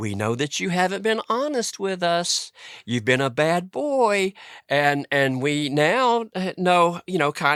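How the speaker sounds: high, babyish put-on baby-talk voice. Retelling a story, acting out Paul's baby voice. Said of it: "he would use his baby voice".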